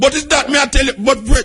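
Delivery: high, heated voice.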